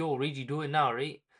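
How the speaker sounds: plain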